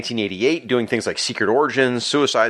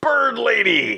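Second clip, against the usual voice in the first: put-on character yell, much higher; 11 semitones higher than usual. Describing a comic scene where Grundy bursts in, Grundy's yell. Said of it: "he yells".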